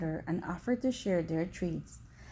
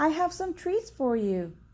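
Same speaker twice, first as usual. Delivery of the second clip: high, put-on girl's voice; 8 semitones higher, 3 dB louder than usual. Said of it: "the wolf replied in a high-pitched voice".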